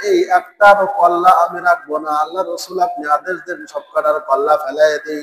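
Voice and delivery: ordinary talk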